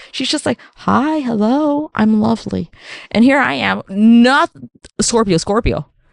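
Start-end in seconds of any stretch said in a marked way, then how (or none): 0.8-2.7 very slow, sweet and charming delivery. Imitating how mom greets people, sounding charming: imitating mom sounding charming. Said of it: "She's charming as fuck".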